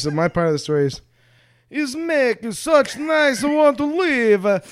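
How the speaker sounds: put-on mock Italian accent. Telling their part of the story, a speaker puts on an Italian accent. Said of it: "with this accent".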